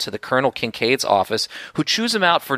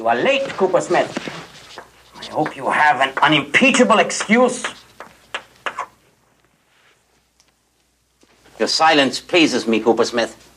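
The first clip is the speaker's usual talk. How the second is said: put-on German-accented English. Voicing a teacher who scolds a student for being late: german accent. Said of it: "the teacher has a, uh, a German accent".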